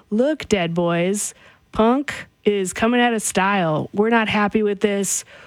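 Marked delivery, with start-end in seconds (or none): none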